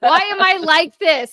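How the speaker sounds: laughing at herself, high-pitched and loud.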